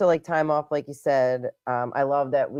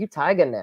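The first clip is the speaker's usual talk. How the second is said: ordinary talk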